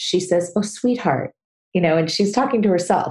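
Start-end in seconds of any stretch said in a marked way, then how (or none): 0.6-1.3 acted, soothing, kind and comforting voice. Retelling how a guest comforts herself: imitating a comforting kind voice. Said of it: "when she comforts herself".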